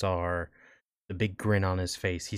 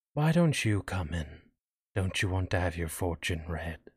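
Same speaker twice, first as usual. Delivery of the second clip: gentle, quiet, soft beckoning voice. Narrator voices a fortune teller speaking to Asher, in a soft voice. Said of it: "in a soft voice".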